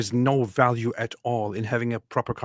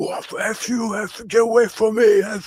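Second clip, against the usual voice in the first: shrill, very high, furious shouting, dragged out; 10 semitones higher, 3 dB louder than usual. Speaker retells Myron shouting at him, retelling Myron's angry shouting. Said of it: "he starts shouting at me like".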